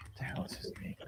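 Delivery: soft, unvoiced whisper under the breath.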